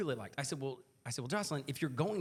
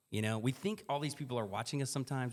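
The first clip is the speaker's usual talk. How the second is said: plain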